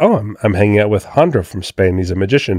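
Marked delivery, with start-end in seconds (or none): none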